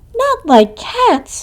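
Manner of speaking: very high, shrill, impassioned, passionate squeal. Reading the story aloud, a narrator voices the mouse's cry in a shrill, passionate voice. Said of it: "in a shrill, passionate voice".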